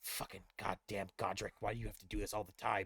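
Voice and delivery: very quiet, low grumbling mutter under breath. Voicing a bartender wiping the wall: muttering under her breath. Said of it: "underneath her breath".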